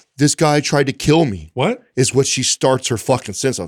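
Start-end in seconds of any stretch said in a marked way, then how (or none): 0.2-1.5 put-on hysterical sobbing, catching breath, much higher. Retelling a woman's phone call to him, imitating hysterical crying. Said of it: "she's hysterically crying. And she's like catching her breath".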